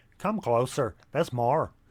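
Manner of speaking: put-on Irish accent. Quoting the Irish comedian's catchphrase: Jimmy Cricket Irish accent. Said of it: "I'm allowed to do the accent".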